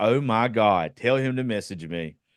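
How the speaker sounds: normal talking voice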